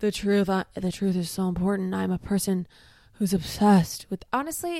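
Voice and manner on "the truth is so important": fake English drawl, slower. Quoting a movie-star actor who talks about the truth, in his fake english accent drawl. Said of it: "in his like his fake English accent drawl".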